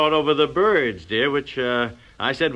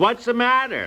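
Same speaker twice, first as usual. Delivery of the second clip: loud, raised, carrying, high-pitched voice; 9 semitones higher than usual. Speaker complains about how women answer a discreet signal; loud voice. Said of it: "they say in a loud voice".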